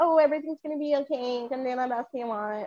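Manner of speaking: comic put-on woman's voice. Contrasting soft motivational talk with a lyric: Kevin Hart female voice. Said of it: "I'm doing the Kevin Hart female voice".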